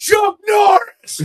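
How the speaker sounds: put-on very high, full-lunged, all-out yelling. Retelling a man going outside to yell, imitating a top-of-lungs yell. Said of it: "yell at the top of his lungs".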